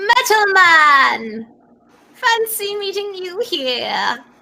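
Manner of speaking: very high, slow voice, stretched Man. Voicing a character stepping ashore to greet a player: voicing Mama Rihanna. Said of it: "And it's Mama Rihanna".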